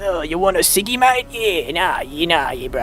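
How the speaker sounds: hushed, low Australian accent in a tramp-like put-on voice. Describing a classic type of australian, doing an aussie train lurker voice. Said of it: "let me get the voice. I can do this voice very well. The kind of uh, train lurker that goes".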